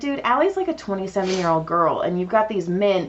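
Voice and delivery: ordinary talk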